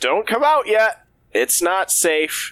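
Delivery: urgent, very high-pitched shouting. Playing Hal in a game as company approaches, shouting a warning. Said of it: "I will shout".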